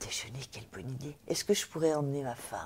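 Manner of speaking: mock-timid quiet voice. Retelling a lunch invitation, quoting the other man's reply, imitating him very timidly. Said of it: "Et très timidement".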